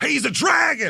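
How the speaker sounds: mock very high, shrill, raw, rough, loud blurted shout. Retelling a show where a front-row audience member shouted: imitating a loud heckler. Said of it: "loud as shit, just goes".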